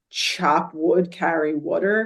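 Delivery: slow Philadelphia accent with stretched, drawn-out words. Naming a book that was recommended to them, in a Philly accent. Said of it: "That's my Philly accent".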